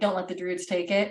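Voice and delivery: ordinary talk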